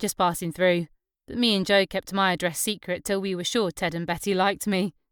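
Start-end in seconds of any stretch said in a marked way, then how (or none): none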